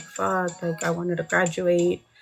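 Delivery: slow, mock weepy, sobbing lament. Retelling what classmates said at graduation: imitating people crying. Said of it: "a lot of people were, like, crying".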